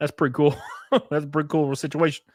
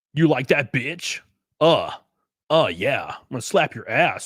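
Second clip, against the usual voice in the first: mock radio announcer voice. Picturing Aaron going at someone, the speaker imitates his radio voice. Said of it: "with his like radio voice".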